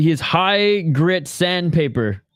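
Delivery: very slow, drawn-out newsreader delivery. Commenting on a fight, reading out a line like Ron Burgundy. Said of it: "I just read it like Ron Burgundy".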